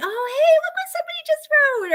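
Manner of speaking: mock yelling, very high-pitched and excited. Retelling calling out to family about viewer comments: imitating own yelling. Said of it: "I'm yelling to my family".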